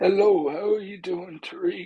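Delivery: put-on weird sickly voice. Greeting a host on a call while being asked about the voice: put-on weird sickly voice. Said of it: "what's going on with this voice".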